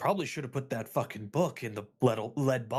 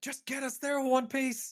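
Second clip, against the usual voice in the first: very high, loud shouting; 13 semitones higher than usual. Voicing a character in a chaotic magic teleport: shouting in character. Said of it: "he just shouts back".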